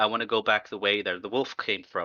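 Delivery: ordinary delivery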